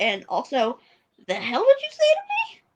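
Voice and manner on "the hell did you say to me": sudden, very high-pitched voice. Imitating her reaction after being told to calm down: imitating her in a high voice. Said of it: "my voice got really high for a second there".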